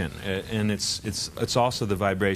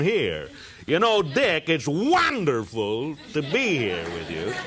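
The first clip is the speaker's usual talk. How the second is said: voice placed in back of throat, swooping pitch; 6 semitones higher than usual. Explaining voice placement, moving it to the throat: Jack Benny voice. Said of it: "moved it up into the back of the throat".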